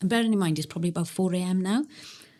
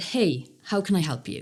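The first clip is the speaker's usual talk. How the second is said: put-on strong, very British-sounding accent. Retelling what he said to a driver who got out of a truck, very British. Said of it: "Very British".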